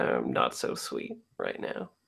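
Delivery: very low, private muttered aside under the breath. A player voices her character as she follows along, muttering under her breath. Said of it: "under her breath".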